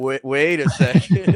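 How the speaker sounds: high, loud, slow, drawn-out dopey character voice.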